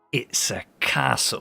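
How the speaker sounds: through gritted teeth. A character answering someone offering extra gold, through gritted teeth. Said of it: "like through gritted teeth".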